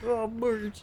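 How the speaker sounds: high cartoon character voice. Trying out a Homer voice while playing: Homer Simpson voice. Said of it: "How does Homer sound again?".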